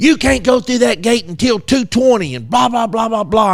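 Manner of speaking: high-pitched, heated, angry, scolding tirade. Retelling how the lady in the truck went off: imitating her angry rant. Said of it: "And then she went off".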